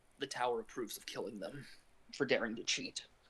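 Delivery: barely audible, very quiet half-whisper under the breath. Player's character secretly half-whispers to another character while pretending to crack neck, half-whispering very quietly. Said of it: "I whisper very quietly".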